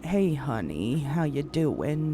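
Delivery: low, slow, drawling Southern accent. Showing how a character talks lower and slower: Mama's Southern accent. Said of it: "very Southern style talking like that".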